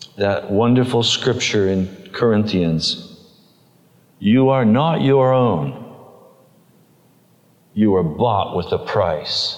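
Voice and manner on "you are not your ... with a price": calm, gentle, steady, plainly spoken delivery. Retelling what the Lord said back: imitating a quiet voice. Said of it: "he very quietly said back to me".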